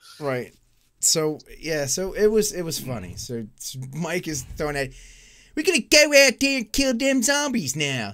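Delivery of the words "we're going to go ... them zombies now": put-on Baltimore accent, higher and louder. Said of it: "I might as well do a Baltimore accent".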